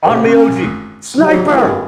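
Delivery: very loud, booming, shrill high-pitched shout. Game master voicing a commander standing up on a cart, booming shout. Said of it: "with his sort of booming voice, he yells".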